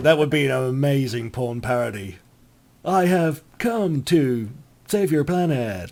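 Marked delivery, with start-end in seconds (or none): 2.8-5.9 stiff, stilted, bad put-on voice. Joking about a porn parody of Star Trek: William Shatner impression. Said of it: "I can't do a very good impression of, uh, William Shatner".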